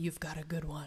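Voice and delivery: put-on whispering voice. Retelling what the other speaker whispered after a panel: imitating a whisper. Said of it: "you whispered in my ear".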